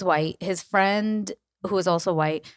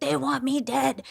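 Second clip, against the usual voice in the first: mock raw, top-of-the-lungs drunk scream, high and rough; 6 semitones higher than usual. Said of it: "screaming at top of his lungs".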